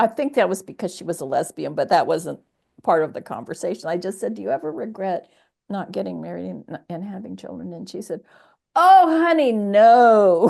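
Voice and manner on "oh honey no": high drawl with the "no" stretched long. Retelling a woman's reply about never marrying, imitating her drawl. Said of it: "With that drawl and".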